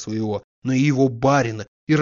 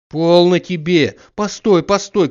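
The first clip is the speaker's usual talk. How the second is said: loud, high-pitched shouted call; 5 semitones higher, 6 dB louder than usual. The yard-keeper calls after Zakhar Trofimovich as he heads home; shouting. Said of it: "кричал дворник".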